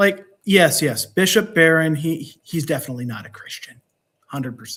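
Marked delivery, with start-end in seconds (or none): 2.4-4.8 sarcastic, ironic tone, saying the opposite. Commenting on a panel member's religion: sarcastic. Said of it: "I hope the sarcasm came through".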